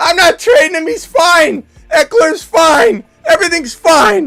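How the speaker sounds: voice shooting way up, high, loud and protesting. Mocking how someone talks about a player, in an imitation whose voice goes high. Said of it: "Their voice gets high".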